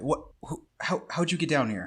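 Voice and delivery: jumpy, surprised, startled stammering blurt. Voicing a man surprised by intruders behind him: startled, whipping around. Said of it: "He whips around like".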